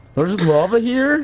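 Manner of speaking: high, slow sarcastic drawl. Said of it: "that was my sarcastic voice".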